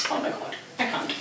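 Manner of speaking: soft, choked-up voice breaking with emotion.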